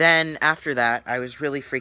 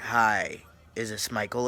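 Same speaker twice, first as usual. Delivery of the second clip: put-on creepy voice, slower; 3 dB quieter than usual. Retelling a call from an unknown caller, imitating a creepy voice. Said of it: "He had a creepy voice".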